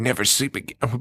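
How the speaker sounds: imitated cartoon duck voice. Retelling a seizing kid's line in a movie: imitating a Donald Duck-like voice. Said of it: "It was like Donald Duck".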